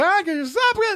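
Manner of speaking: high-pitched, slow mock voice.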